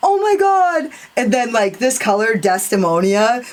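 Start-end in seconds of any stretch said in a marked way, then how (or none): 0.0-0.9 imitated shout at a higher pitch. Retelling own reaction to watching a palette swatch: imitating own yelling.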